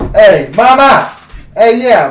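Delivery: put-on Italian accent. Joking about recasting a Jedi as Italian: Italian Jedi accent. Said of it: "an Italian Jedi?".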